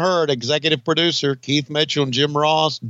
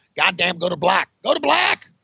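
excited, rough-edged, unrestrained outburst; 3 semitones higher than usual. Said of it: "got into my Jim Herd voice".

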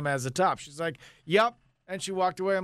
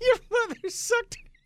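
laughing through words, higher pitch. Joking about a mother vacuuming up a hamster, laughing while talking. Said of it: "Stop laughing".

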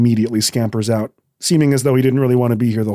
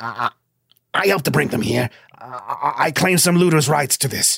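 raised put-on voice, higher; 3 semitones higher, 3 dB quieter than usual. Narrating a scene before the king, Clipper speaking up with a raised voice. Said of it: "Clipper kind of lifts his voice".

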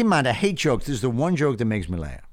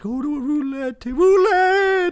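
eerie, very high ghostly voice; 4 dB louder than usual. Telling a joke, voicing the ghost that guides a man: ghostly voice. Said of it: "The ghostly voice says".

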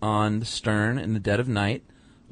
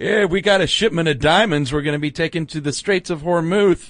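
loud, high, blabbing, bragging loudmouth sailor voice; 7 semitones higher, 6 dB louder than usual. Imitating a loudmouth shipmate talking at the bar in port: loudmouth shipmate impression. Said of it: "That was a perfect impression".

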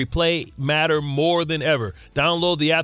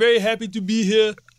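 high, put-on Jamaican accent; 6 semitones higher than usual. Attempting a store clerk's voice, it comes out as an accidental Jamaican accent. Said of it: "you went Jamaican bobsled team there".

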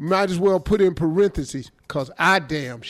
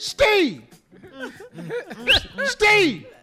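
pretend yelling, higher. Joking with another speaker, calling out a name: mock hollering. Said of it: "I'm hollering at myself".

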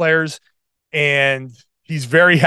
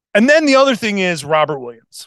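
plain

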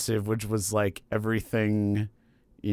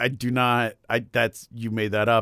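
ordinary talk, nothing marked

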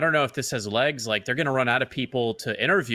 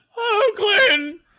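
loud, high-pitched cartoon cry; 6 dB louder than usual. Give a taste of your impression after being praised for it, a Clayton impression. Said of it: "let me give you a taste of that".

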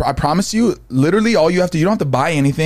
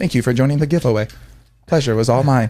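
mock robotic voice; 3 semitones lower than usual. Teasing the other speaker about how they sounded announcing a giveaway: imitating a robotic voice. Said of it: "You're like all robotic".

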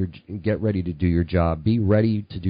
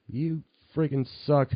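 high, angry yelling; 8 semitones higher, 5 dB quieter than usual. Retelling what angry paper customers said to the kid: imitating angry customers yelling. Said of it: "they would actually yell at me".

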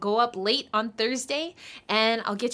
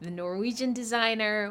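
normal talking voice

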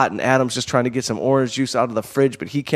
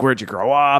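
put-on growling voice. Retelling a conversation, quoting Dan's question, imitating Dan's growling voice. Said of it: "He talks like he's growling all the time".

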